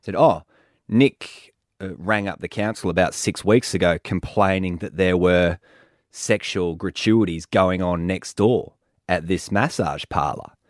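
normal talking voice

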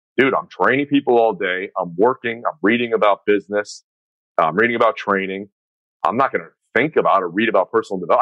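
normal talking voice

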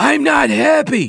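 mock raspy roaring bellow, very high. Reading a joke aloud, voicing a man's outburst at a trucker, bellowing. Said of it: "Fauci bellows".

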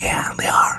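soft, breathy whisper, barely voiced. A speaker talking about orphanages he supports, doing a Biden-style whisper. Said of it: "I'm doing the whispering".

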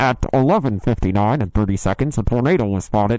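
crackly, dry official emergency-alert broadcast voice. Describing a severe weather alert on the phone, the speaker mimics its crackly emergency alert voice. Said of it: "it's always really crackly".

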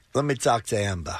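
put-on, imitated Boston accent. After a failed try, another attempt at a Boston Rob impression. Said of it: "A little better".

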